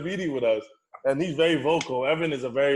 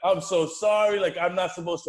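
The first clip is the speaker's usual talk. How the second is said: mock tearful, choked-up, crying and sobbing; 4 semitones higher than usual. Retelling a teammate's apology to another speaker: imitating someone crying.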